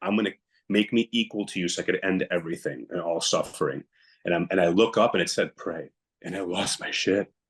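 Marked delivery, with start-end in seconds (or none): none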